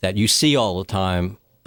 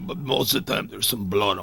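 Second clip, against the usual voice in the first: put-on Russian accent, quieter; 6 dB quieter than usual. Playing a character after being asked to show the accent: russian accent. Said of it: "Neil does a great, uh, Russian accent".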